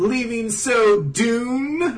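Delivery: high, slow, hammy villain voice.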